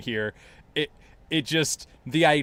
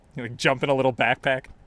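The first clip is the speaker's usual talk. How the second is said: usual speaking voice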